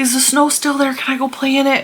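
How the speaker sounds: put-on high, eager little boy voice. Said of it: "he's every day".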